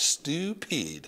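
put-on the word stupid in a French accent. Narrator mimicking how Grandmere pronounced 'stupid': Grandmere's French accent on 'stupid'. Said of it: "The way she pronounced stupid was kind of funny. Like stupid".

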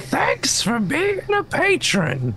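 stressed voice, very high and slow. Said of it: "He's saying".

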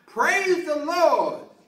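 shrill cry, pitched way up. Telling a joke, acting out the woman finding groceries: acting out a shout. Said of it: "saw a large bag of groceries and shouted".

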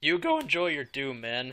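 cracking, breaking voice. Wrapping up a video with a co-host, voice cracking. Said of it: "as my voice cracks".

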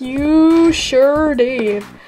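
put-on cowboy voice with fake cowboy accent. Replying to the other speaker's announcement, in a cowboy voice. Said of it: "Why are you talking in cowboy voice?".

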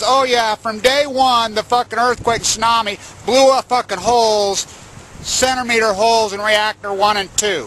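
ordinary delivery

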